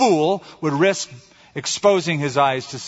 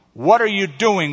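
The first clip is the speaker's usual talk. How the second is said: nervous cry, pitched higher; 5 semitones higher, 4 dB louder than usual. Narrator reads a cave person calling out to a stranger in the dark, cried nervously. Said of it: "one cried nervously".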